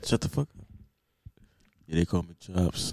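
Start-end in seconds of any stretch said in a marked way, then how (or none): 1.9-2.9 very low, deep, fake sexy voice. Wanting to be the sexy voice too, introducing himself as Chops: fake sexy voice. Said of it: "I wanted to be the sexy voice too".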